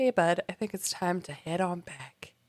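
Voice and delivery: very soft, quiet, hushed under-the-breath voice. Retelling a story, a voice calls Harry back, quiet Dumbledore voice. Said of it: "Harry hears a quiet voice that's like".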